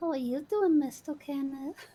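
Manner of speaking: put-on very high-pitched, played-up, creepy little child voice. The speaker shows the voice people find creepy: playing up a little kid voice. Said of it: "when I play up the little kid".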